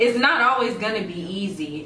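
ordinary talk

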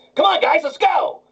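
very high, squeaky helium cartoon sailor voice. Answering what the suggested voice would sound like; Popeye on helium voice. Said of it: "Popeye on helium?".

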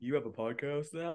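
low, quiet put-on deep bass voice. Retell a brother's reply to your podcast invitation, imitating a brother's deep voice. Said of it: "He got that deep voice".

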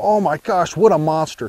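ordinary delivery

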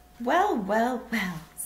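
on a weary sigh. Mr. Willy Wonka sighs as he addresses the three remaining children. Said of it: "sighed Mr. Willy Wonka".

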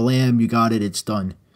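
ordinary talk, nothing marked

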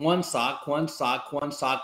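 normal talking voice

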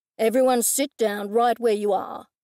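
commanding, authoritative, take-charge tone. A man pulls the narrator away from a withered plant and addresses everyone, in a commanding tone. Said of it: "he said in a commanding tone".

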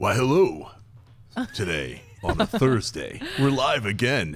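showy, loud, swooping movie announcer voice. Co-host greeting viewers on a live show, Moviefone announcer voice. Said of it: "I was doing the movie phone voice".

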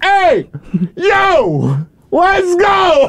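shrill New York accent, "yo" stretched. Imagining the crickets chirping outside, in a New York accent. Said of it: "just imagine them with a New York accent going".

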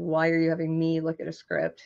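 ordinary talk

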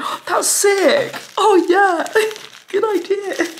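very high, eager, excited, puppyish gushing. Imitating how he always reacts to things, mock-excited gushing like a golden retriever. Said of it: "really excited, like a golden retriever".

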